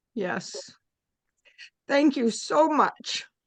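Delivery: tearful voice, crying while speaking. On the group's last night, the speaker thanks a participant, crying while talking. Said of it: "you're crying too".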